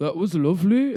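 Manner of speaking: put-on Northumberland accent. Telling one final story, imitating a man's parting remark: strong Northumberland accent, monotone. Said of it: "he said it in a really Northumberland accent".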